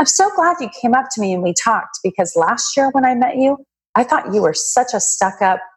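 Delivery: lighthearted, friendly, joking, teasing tone. Recalling meeting a man again a year later, speaker quotes him; retelling a joking remark. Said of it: "he says to me jokingly".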